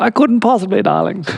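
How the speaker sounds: big, dramatic, grand delivery, pitched high. Quoting a favourite film character dramatically: dramatic Edna voice. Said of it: "Dramatic like that".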